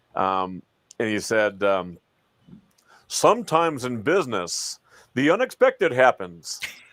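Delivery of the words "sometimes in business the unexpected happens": swooping radio station ad announcer voice. Recounting a radio ad they heard, quoting the announcer in a radio announcer voice. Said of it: "this radio station announcer voice kind of guy".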